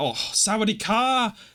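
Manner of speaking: play-acted, overly loud blurt. Retelling greeting a woman after hitting her head: imitating own loud hello. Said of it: "I said it so, like, loud".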